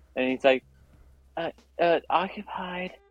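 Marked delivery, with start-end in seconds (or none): 1.4-2.9 put-on tiny, high voice of a four-year-old. Retelling a kid answering from a locked bathroom stall: imitating a little kid's voice. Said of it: "a little kid's voice, like, a four or five-year-old".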